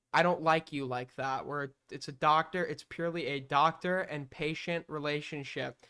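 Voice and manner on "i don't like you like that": put-on stern tone. Retelling what the psychiatrist said to her, imitating a stern tone. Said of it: "he said very sternly".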